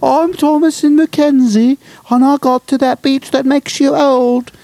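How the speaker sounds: very high, squeaky cartoon mouse voice. Pretending to be Thomasin McKenzie, in a cartoon mouse voice. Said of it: "now I sound like a mouse".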